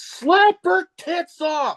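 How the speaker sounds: high, slow, heckling yell. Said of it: "I just yell out".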